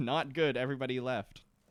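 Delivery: ordinary delivery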